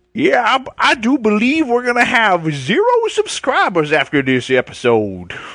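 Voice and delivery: put-on old prospector voice. A player in character as a cowboy in a roleplay game, in an old prospector voice. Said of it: "I like how you're an old prospector".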